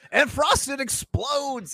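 very high, loud race-announcer shout. Retelling how the race caller calls a Frosted race: imitating a race caller. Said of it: "whoever's making the race call".

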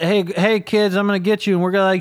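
acted grouchy, mean, threatening old man yell. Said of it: "he was yelling at us".

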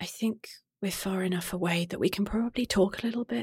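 barely above a hush, very soft, quiet murmur. The narrator voices Demi, the group's human companion who cannot see, speaking very quietly. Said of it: "She very quietly then says".

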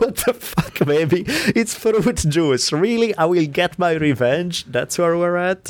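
mock squeaky, very high-pitched incredulous outburst. Retelling his own reaction to the muttered threat: imitating his own incredulous reply. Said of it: "I was like".

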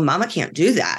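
plain

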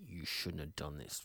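very quiet, gritty words through gritted teeth. Showing how the line could be read: gritty, through the teeth. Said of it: "that real gritty through the teeth".

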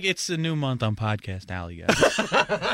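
put-on lukewarm, unexcited, halfhearted delivery with swooping pitch. Mocking another speaker's opening line: imitating unexcited delivery. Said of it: "You're like".

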